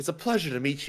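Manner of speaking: small-sounding character voice. Voicing a small character shaking hands and apologizing: Breakaleg voice. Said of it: "he says".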